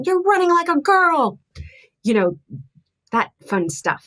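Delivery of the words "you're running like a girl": high, loud yelling in a coach voice. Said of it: "the coach that'll scream".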